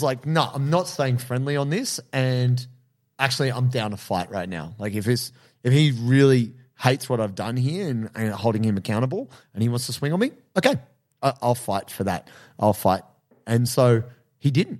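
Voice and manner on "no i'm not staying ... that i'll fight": plain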